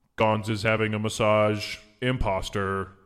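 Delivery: golem guard character voice. Voicing a golem who points at an intruder: voicing a golem. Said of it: "the golem points at you and says".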